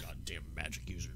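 very low, soft grumbling under the breath. Retelling a man's reaction after being told to go back out back: retelling a grumble. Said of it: "He just kind of grumbles".

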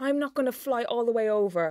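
plain

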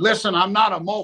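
play-acted angry, fed-up, exasperated tone. Retelling Flair coming back to the dressing room: imitating angry Flair. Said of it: "Flair came back to the dressing room mad".

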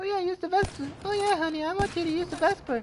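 very high, badly faked female voice. Teasing a teammate about who suggested the class setup, in a bad mother impression. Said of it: "That's a bad impression of a mother's voice".

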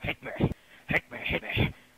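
put-on villain voice. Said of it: "Joker's like".

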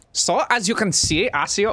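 mock elderly scientist voice. Voicing a game character, others question the voice: Einstein-like voice. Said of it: "what the fuck is that voice?".

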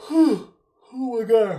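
words stretched through a high-pitched yawn. Chatting with viewers after a busy week short on sleep, yawning. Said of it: "I'm sorry I'm yawning".

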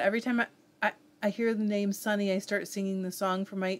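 plain

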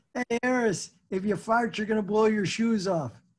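mock coach voice, yelling and calling out. Retelling what the football coach yelled down the hall: imitating a coach yelling. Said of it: "the football coach from down the hall yells".

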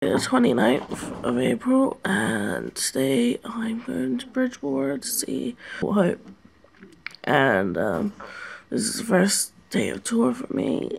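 just-woken-up voice. Vlogger starting the first day of tour, having just woken up, just-woken-up voice. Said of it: "so my voice is bleh".

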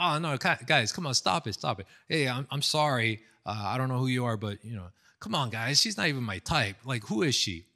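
a little serious, earnest tone. Retelling what the pastor said to the group: imitating a serious tone. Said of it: "his tone got a little serious".

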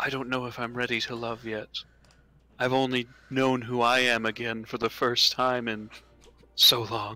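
gentle, soft, hesitant, unsure. A game master voices a woman character replying to the player: soft, hesitant.

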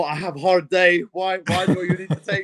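put-on Eastern European accent. Speaker retelling what a man said, imitating his Eastern European accent. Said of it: "Like in his Eastern European accent".

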